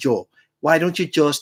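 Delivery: ordinary talk, nothing marked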